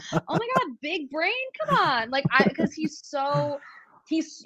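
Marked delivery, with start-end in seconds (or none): 0.1-2.1 mock enthusiastic cheering, higher pitch. Retelling watching the show back and rooting for a player: imitating own cheering someone on. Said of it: "and I'm rooting him on".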